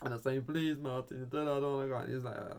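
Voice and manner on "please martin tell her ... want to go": put-on tearful voice, higher pitch. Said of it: "I'm there crying".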